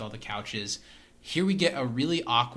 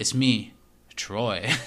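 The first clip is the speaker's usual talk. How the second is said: put-on swaggering, cocky voice; 2 semitones lower, 4 dB louder than usual. Retelling a scene where Troy walks up to Annie: imitating Troy's swagger. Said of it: "swagger he's trying to put on".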